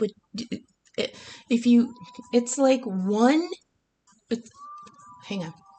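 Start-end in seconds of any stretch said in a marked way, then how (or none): 0.0-4.5 stammering, false starts, breaking off, swooping pitch. Speaker explaining what the cups mean, losing the thread; stuttering. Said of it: "I'm sorry, I'm stuttering".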